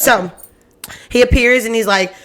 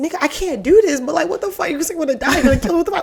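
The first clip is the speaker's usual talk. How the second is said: put-on high, rushed, frantic, disbelieving outburst; 7 semitones higher than usual. Retelling a fairy tale, the locked-up woman's words: imitating someone freaking out. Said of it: "freaking out 'cause she's like".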